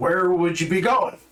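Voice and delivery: put-on high-pitched piratey accent. Retelling a man's reply when asked to captain a ship, in a piratey accent. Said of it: "that almost that piratey accent".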